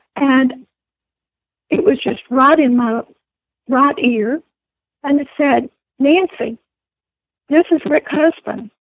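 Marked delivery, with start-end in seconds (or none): 6.0-8.6 firm, assured, authoritative, commanding delivery. Retelling a voice heard in the right ear: Rick Husband's deep authoritative voice. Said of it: "it was very authoritative, very deep".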